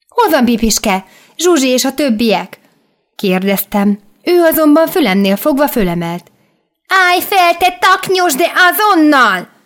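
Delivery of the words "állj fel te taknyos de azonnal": shrill, very high-pitched shout. Holding the narrator up by the ear, she shouts at them. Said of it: "Kiabált".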